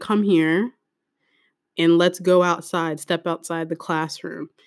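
ordinary delivery

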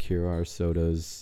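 imitated monotone drone. Speaker retells a worker handing out sodas, imitating his monotone. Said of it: "he was very monotone".

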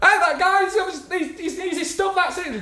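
put-on shrill, very high-pitched holler. Retelling how a guy on the platform called the conductor: imitating someone shouting. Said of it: "he's shouting the conductor".

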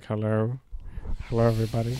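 voice dropped very low and deep. Retelling a show where the guest greets the crowd: imitating Elon Musk. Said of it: "And he was like".

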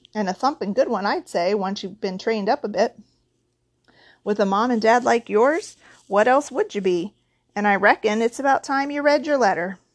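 usual speaking voice

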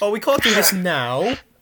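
mock dramatic voice, slow, high and loud.

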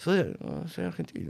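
acted soft speaking. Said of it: "Bajito, ¿viste?".

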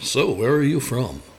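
put-on announcer-style radio voice. Recalling trying the radio voice in early interviews: put-on radio voice. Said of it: "I did try and do the radio voice interview thing".

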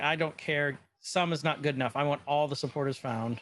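ordinary talk, nothing marked

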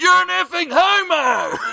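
high, yelled-out heckling, pitched way up.

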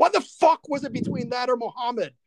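genuinely angry, high-pitched ranting voice.

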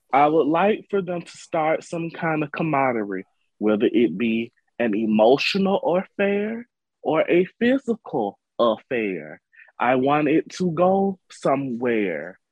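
very slow, deliberate, drawn out word by word. Praying aloud to Soap Jesus for a storyline, saying it slowly. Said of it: "I have to say it slow".

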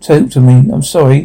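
ordinary delivery

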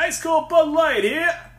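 very high, loud stadium beer-vendor holler. Imagining being at Yankee Stadium with beer vendors calling out, yelling stadium beer vendor. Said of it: "that's a terrible impression of a beer vendor".

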